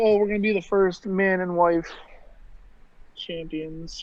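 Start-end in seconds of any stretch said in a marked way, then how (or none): none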